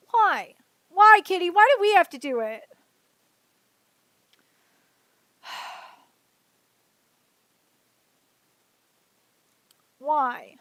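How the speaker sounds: exasperated, annoyed, fed-up complaining tone. Venting to Kitty about being constantly rejected, annoyed venting. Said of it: "I'm just so fucking annoyed".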